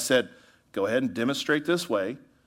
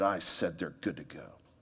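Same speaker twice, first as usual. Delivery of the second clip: spiteful, poisonous, venomous tone; 7 semitones lower, 10 dB quieter than usual. Retelling the leader's reply about his two guys: imitating a venomous tone. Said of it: "with venom in his voice".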